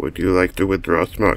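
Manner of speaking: atm robot voice. Voicing an ATM machine while playing a game: robot voice. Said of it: "I have a robot voice".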